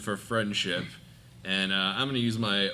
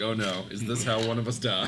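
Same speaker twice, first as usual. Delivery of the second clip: ordinary delivery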